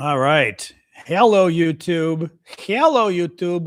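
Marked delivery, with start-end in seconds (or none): 2.4-3.7 very slow, drawn-out, put-on Greek accent. Opening a video and greeting youtube viewers: greek accent. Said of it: "I'm doing my Greek accent".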